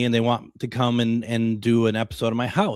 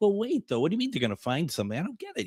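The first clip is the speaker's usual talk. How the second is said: put-on naive, bewildered, childlike, high sing-song tone; 7 semitones higher, 5 dB quieter than usual. Retelling own past reaction to a TV crew: imitating own childlike confusion. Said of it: "I'm being very, like, very childlike about it".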